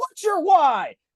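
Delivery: acted yelling. Retelling how a workout instructor kept shouting at riders: imitating an instructor yelling. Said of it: "she would yell at me the entire time going".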